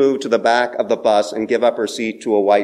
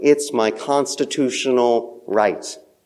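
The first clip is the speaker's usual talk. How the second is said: usual speaking voice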